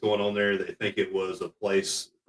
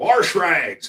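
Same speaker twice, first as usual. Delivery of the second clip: very high, loud put-on Southern accent on "wash rags"; 10 semitones higher, 7 dB louder than usual. Retelling what he told a man, in his best Southern voice. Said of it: "I gave him my best Southern voice".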